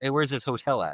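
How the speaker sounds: non-native speaker's broken English. Retelling a cab driver asking where the hotel is: imitating broken English. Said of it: "in his broken English".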